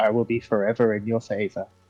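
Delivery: mock semi-sarcastic tone. Retelling what she said to get him to leave her bedside, mock semi-sarcastic. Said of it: "probably semi-sarcastically".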